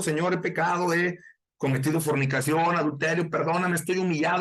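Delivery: ordinary delivery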